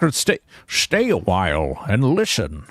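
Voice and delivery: swooping game-narrator storyteller cadence. Playing an ogre while talking like Deckard Cain: Deckard Cain voice. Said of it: "did you go, Deckard?".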